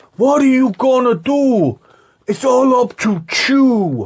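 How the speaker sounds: very high, slow, bad fake Puerto Rican accent. Retelling how a film villain talked: imitating a fake Puerto Rican accent. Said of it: "he says".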